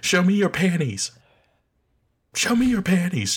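very high, swooping scream at full pitch. Retelling what the flying dog in a show keeps yelling: imitating screaming. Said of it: "It's just screaming to high heaven".

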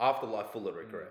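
plain

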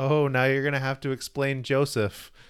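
ordinary talk, nothing marked

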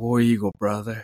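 mock whispering. Retelling leaving the stadium, a fan at the entrance: imitating a fan whispering. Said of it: "And he whispered it".

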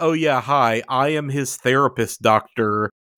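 ordinary talk

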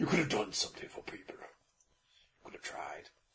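breathed out, barely above a whisper. Tell someone how their speech sounds to you, acting it out in a Beast from Beauty and the Beast voice. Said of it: "you sound like Beast from Beauty and the Beast".

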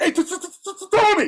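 very high-pitched, stammering, stuttered delivery. Act out Wilt calling to you as you walk to the bus stop, imitating Wilt's stutter. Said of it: "because Wilt stuttered".

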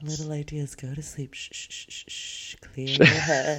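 mock soft ASMR-style whisper. Joining a joke about an ASMR podcast: mock ASMR whisper. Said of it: "we only whisper".

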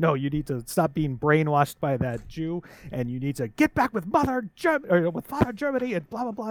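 high-pitched ranting voice with wild swooping pitch. Act out him telling Jojo what he needs to do in the movie, in a Hitler voice. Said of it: "when he goes off in the Hitler voice".

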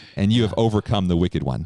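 ordinary talk

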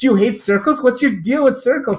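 put-on very high exasperation. Recounting their own past words to someone, retelling being at wit's end. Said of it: "just at wit's end".

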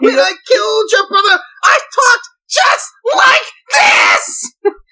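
very high, very loud menacing shriek. Speaker quoting the villain's line from Who Framed Roger Rabbit, Judge Doom voice. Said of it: "You are going to scare the neighbors".

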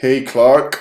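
fake, put-on American accent. A podcast host reads out a friend's question: put-on American accent. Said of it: "that's my American accent".

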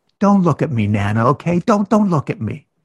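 put-on sugary, charming, very sweet little-girl voice. Retelling a three-year-old telling her grandmother, imitating a child speaking sweetly. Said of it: "she says very sweetly to her grandmother".

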